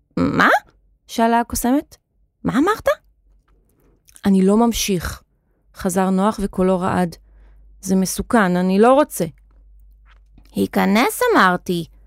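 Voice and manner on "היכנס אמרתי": screechy, squawky hen voice. Narrator reading the hen's line in a story, shrill hen voice. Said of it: "אמרה התרנגולת בקול צווחני".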